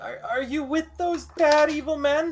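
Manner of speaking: put-on very high, tearful, stammering crying old woman voice. Narrator voicing an old woman who cries and looks up: crying old woman. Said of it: "She cries and like looks up and says".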